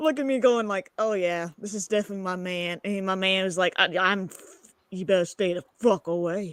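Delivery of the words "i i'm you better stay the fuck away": put-on country accent. Retelling what her man said back then, in a country accent. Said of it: "And a country accent".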